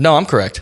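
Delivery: put-on confident tone. Retelling own past reply to an NCO who said it was wrong: imitating own confident reply. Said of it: "as confident as I could".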